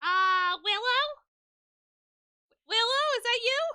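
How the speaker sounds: shrill, very high, blaring, silly funny alien voice. After cashing in, a player voices the alien god calling to Willow, funny alien voice. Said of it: "cashed in do a funny voice".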